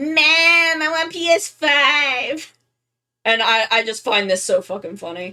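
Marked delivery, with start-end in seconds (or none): 0.0-2.5 put-on very slow, high, drawn-out cartoon voice. Voicing Jeed as Bowser Junior: Bowser Junior voice, a little Cartmanish. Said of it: "my Bowser Junior voice is, is a little, a little Cartmanish".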